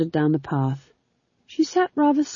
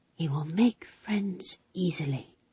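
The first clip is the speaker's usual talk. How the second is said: soft, quiet whisper under the breath; 9 dB quieter than usual. Reading a story, a woman stares at a ball and speaks: whispered. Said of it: "she whispered".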